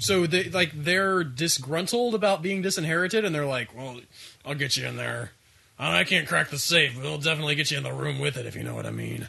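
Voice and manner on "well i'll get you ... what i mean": rough, raspy, creaky, voice-straining smoker character voice. Playing a disinherited daughter offering to get someone into the room with the safe, voice-straining daughter character voice. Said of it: "this is hurting my voice, so I'm going to stop doing this voice".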